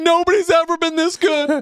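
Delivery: put-on mock screaming, pitched high. Acting out what to yell to chase a roommate out: mock screaming during sex. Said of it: "Start screaming stuff like".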